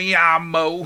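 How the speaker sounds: Spanish pronounced with a Texan accent. Describing the Spanish learned while living in Texas, in Texan-accented Spanish. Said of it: "the Texan version of Spanish".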